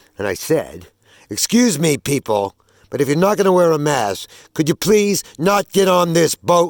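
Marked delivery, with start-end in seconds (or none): 1.3-6.7 commanding, authoritative voice. Retelling telling maskless boat passengers off: retelling an authoritative command tone. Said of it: "in the authoritative tone of voice of a non-commissioned officer".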